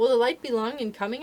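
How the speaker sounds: ordinary delivery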